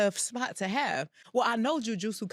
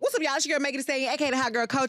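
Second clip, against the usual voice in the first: rapid-fire, fast, pitched-up hype delivery; 5 semitones higher, 4 dB louder than usual. Greeting the audience before ranking her top five anime, talking fast. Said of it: "she talking fast".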